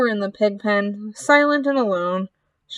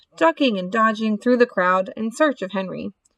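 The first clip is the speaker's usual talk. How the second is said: plain reading voice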